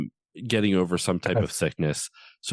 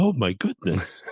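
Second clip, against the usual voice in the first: whimsical, exclaiming storybook character voice. Showing how a Tigger voice turns out: Ed Wynn voice. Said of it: "it always just turns into Ed Wynn".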